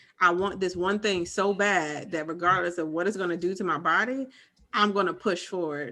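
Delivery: plain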